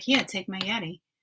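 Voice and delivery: put-on annoyed, bent-out-of-shape tone. Retelling own earlier words offering a drink: retelling own bent-out-of-shape tone. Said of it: "I sounded bent out of shape".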